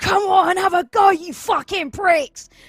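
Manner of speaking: very high, very loud, frenzied howling scream. Game player voicing his barbarian taunting enemies while running at them, howling scream. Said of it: "I want him to be howling and like just like screaming".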